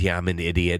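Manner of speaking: usual speaking voice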